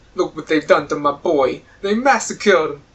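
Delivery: bad, wrong kind of put-on Italian accent. Repeating a quoted line, in a bad put-on italian accent. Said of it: "that's the wrong kind of Italian accent".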